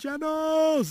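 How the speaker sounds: high-pitched, loud yelled call.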